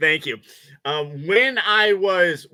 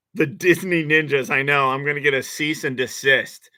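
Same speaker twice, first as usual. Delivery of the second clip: usual speaking voice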